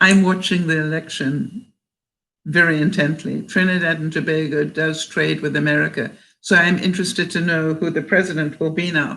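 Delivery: ordinary talk, nothing marked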